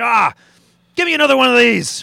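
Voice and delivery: put-on very high, very loud, booming Irish accent. Telling a joke, the man answers the Genie's second wish, Irish accent. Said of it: "I'm impressed by the Irish accent".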